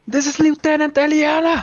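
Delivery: yelling out. Approaching soldiers with hands up, a character announces their name: screaming own name. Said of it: "I'll be screaming my fucking name".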